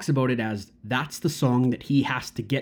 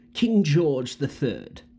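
pompous, haughty British royal-sounding voice. Describing a character from a musical, imitating King George British voice. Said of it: "He talks like this".

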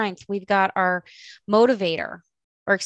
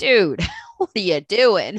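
slow, exasperated comic character voice. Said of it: "mentor ... comic relief being like".

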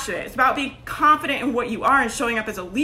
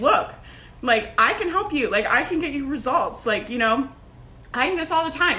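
normal talking voice

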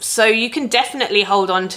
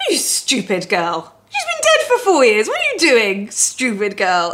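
tiny, high-pitched scolding voice. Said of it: "tiny little voice in my mind that's like".

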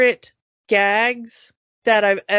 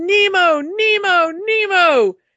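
high, stretched-out, drawn-out acted screaming; 8 semitones higher, 5 dB louder than usual. Retelling a film scene where he reaches the surface and screams for nemo, retelling a scream. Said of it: "he screams".

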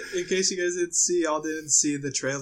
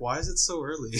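ordinary talk, nothing marked

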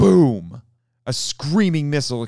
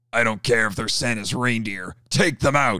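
sharp, barking delivery. As fighter planes attack, a man barks an order. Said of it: "barked Gunn".

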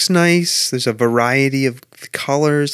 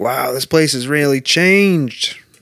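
put-on Maine local accent. Speaker retells what other visitors around them were saying; Maine accent. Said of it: "That was my Maine accent".

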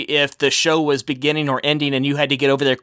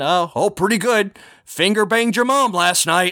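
high, pitched-up put-on character voice; 6 semitones higher than usual. Retelling what the Muppet said on set, in Sweetums voice. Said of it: "in Sweetums' voice just saying".

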